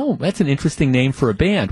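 ordinary talk

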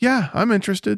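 put-on half-hearted, passive, uninterested, can't-be-bothered tone. Retelling how a man answered, imitating a passive tone. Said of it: "his tone was, even more passive".

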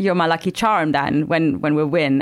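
ordinary talk

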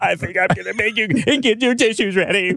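grand wizard voice. Speaker answers a listener before closing with a poem, in a Wizard of Oz voice. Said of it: "you sound like the Wizard of Oz".

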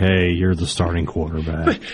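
deadpan, flat, level, unexcited monotone. Imitating a coach telling a player he is the starting quarterback: imitating Lane Kiffin's unexcited voice. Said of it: "in that voice".

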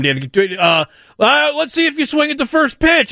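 high, drawn-out, taunting, heckling yell. Retelling heckling a batter from the center field bleachers, retelling a screamed heckle. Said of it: "I start screaming at him".

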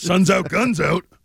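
put-on cartoon character voice. Describing Celtics fans at the beach, the speaker does a Fat Albert voice. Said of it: "I love your Fat Albert voice".

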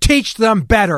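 put-on curt, blunt tone. Retelling what they said to a woman whose kids ran into them, retelling a loud, brusque remark. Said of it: "I said in a very loud, very brusque voice".

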